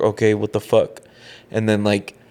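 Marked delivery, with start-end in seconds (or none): 0.0-1.0 frustrated, exasperated tone. Retelling the moment the AirPods connected but gave no sound: retelling own frustrated words. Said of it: "So I was frustrated".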